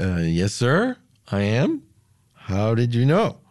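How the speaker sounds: normal talking voice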